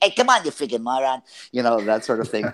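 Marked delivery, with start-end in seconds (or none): 0.0-1.2 pitched-up, over-the-top New York accent. Recalling a cartoon role as a New York uncle: Joe Pesci-style New York voice. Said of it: "I modeled after kind of a Joe Pesci".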